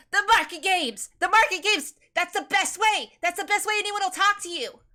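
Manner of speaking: put-on eager child voice, high, very loud shout. Playing a kid who throws his hand up and calls out: eager shouting kid character. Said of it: "immediately puts his hand in the air and goes".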